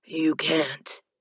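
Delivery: flat, expressionless delivery. Narrating a story, voice the man's reply to the narrator in an emotionless tone. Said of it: "he informs me in his emotionless tone".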